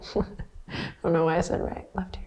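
soft, breathy, half-whispered, laughing delivery. Leading a class after mixing up left and right, laughing.

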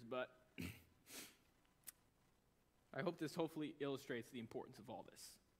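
tearful, speaking through tears. Speaker apologizing for the tears while making a point, tearful. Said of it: "sorry for the tears".

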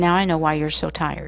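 ordinary delivery

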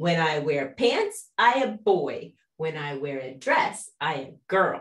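slow, cheeky, sassy tone with mock attitude. Retelling a daughter copying a boy's tone: imitating a sassy tone. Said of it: "copies his sassy tone".

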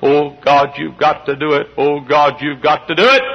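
acted, imploring, begging plea, repeated over and over. Showing how to beg God through prayer and fasting: begging and pleading God. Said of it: "begging and pleading God".

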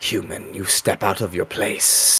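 slow, drawn-out hissing voice. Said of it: "hisses and says".

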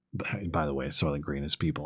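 soft, very hushed, quiet half-whisper. Retelling how a dying friend tells Thorne the secret: imitating a half-whisper. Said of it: "he whispers to Thorne".

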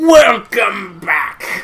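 acted pirate character voice. Greeting the viewers on return: Patchy the Pirate voice. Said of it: "are you a pirate now?".

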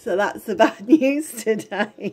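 laughing while talking. Sharing unwelcome news yet unable to stop: laughing while talking. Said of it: "I don't know why I'm laughing".

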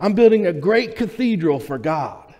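acted-out, all fired-up, excited and eager. Retelling a third worker's answer to the same question: imitating an excited reply. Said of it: "he was all excited about what he was doing".

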